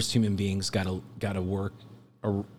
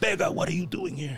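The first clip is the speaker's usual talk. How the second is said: put-on very high voice, thick Ecuadorian or Peruvian-type accent; 9 semitones higher than usual. Quoting another guy questioning the speaker, thick Ecuadorian or Peruvian accent. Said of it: "he had a real thick Ecuadorian accent or Peruvian".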